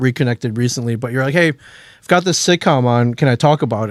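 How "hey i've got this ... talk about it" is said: plain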